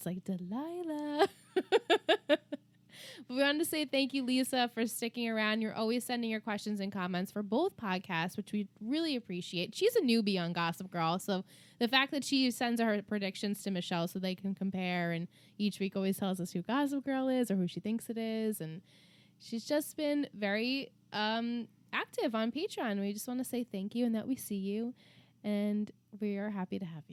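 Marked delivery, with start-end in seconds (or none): 0.3-1.3 slow, drawn-out, soothing advice-host voice. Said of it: "she talks really low and she gives the advice".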